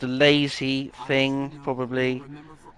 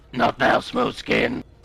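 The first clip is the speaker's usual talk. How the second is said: acted ghoul monster voice; 2 semitones lower than usual. Repeating a game ghoul's line after it is heard: imitating the ghoul's voice. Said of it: "you do the voice really well".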